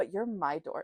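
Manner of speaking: normal talking voice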